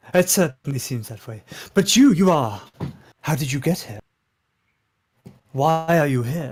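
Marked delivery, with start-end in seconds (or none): 3.2-6.5 sincere concerned tone, lower pitch. A townsman asking the newly arrived outsiders how they got here, genuinely concerned. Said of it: "a genuine concern comes across in that question".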